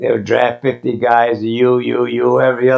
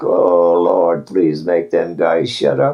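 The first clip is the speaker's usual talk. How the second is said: low grumbling muttered quietly under the breath; 6 semitones lower than usual. Retelling own past words muttered to himself: imitating muttering under breath. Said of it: "I'd say under my breath".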